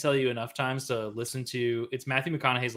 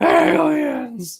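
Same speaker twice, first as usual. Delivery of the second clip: put-on scream at the top of the lungs; 12 dB louder than usual. Imagining Nicolas Cage meeting aliens: Nicolas Cage screaming. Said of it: "start fucking screaming some random shit".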